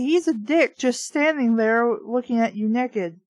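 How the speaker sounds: usual speaking voice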